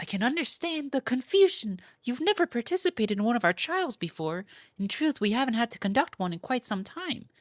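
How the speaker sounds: put-on girl's voice. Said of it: "how do I make it girl sound?".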